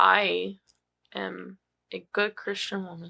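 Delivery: hesitant delivery. Declaring something about yourself after a joke: hesitant delivery. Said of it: "Why did you say that with so, so much hesitation?".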